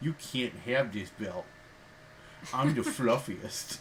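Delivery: silly, cutesy little uwu voice. Joking about being the cutest little heel champion, funny voice as cute champion. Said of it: "You were doing a funny voice".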